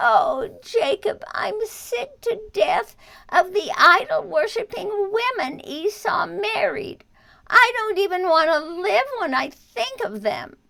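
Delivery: begging tone. Reading aloud a mother's plea to her son before he leaves: begging. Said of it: "After a little more weeping, she begged".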